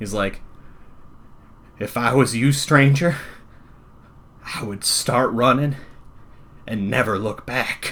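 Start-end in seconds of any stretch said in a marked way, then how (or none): 1.8-7.9 quavering, unsteady, trembling, shaky voice. Telling a story, the speaker voices a character's line in a shaky voice. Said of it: "he says with this like shaky voice".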